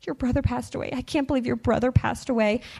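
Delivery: fast, sobbing, tearful crying voice. Retelling a teacher's tearful reaction to him, imitating someone sobbing. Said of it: "She's sobbing. She's crying".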